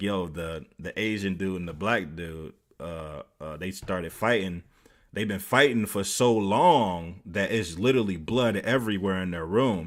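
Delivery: ordinary delivery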